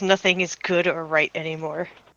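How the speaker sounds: soft, flat deadpan mutter, no inflection. Describing how Cal reacts, the speaker gives his line as a deadpan mutter. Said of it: "Just like deadpan".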